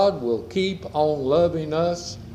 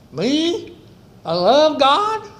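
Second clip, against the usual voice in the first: very high, loud squeaky voice; 11 semitones higher, 6 dB louder than usual. Retelling a movie's opening line, doing Barney Fife's high, squeaky voice. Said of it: "in his high, squeaky voice".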